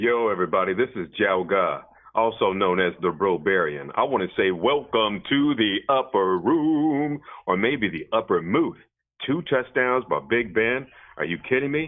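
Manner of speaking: radio announcer voice. Jalga opens the show, welcoming everyone to the upper room: good radio voice. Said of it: "That was definitely a good radio voice".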